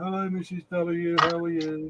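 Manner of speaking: soft, gentle, polite, high little voice. Retelling how Chris greeted Missus W last night, imitating Chris's greeting. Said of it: "Chris did his".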